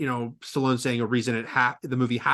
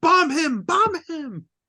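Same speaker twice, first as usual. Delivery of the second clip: put-on very high, very slow, drawn-out scream. Retelling a scene from the final fight: imitating Duke screaming. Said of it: "Duke screams".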